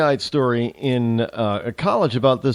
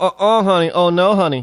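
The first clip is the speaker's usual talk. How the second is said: woman's voice with raised pitch; 5 semitones higher, 4 dB louder than usual.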